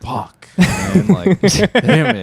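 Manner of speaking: downcast, sorry grumble. Retelling how a grandpa reacted to two more years: imitating a sad grandpa. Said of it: "he sounds so, like, sad".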